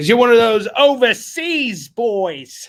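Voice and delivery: very loud, high-pitched, put-on British accent. A seller tells an overseas customer they still need their books, in a british accent. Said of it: "Is that a good British accent?".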